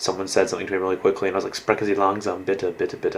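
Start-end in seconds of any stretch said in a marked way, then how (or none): none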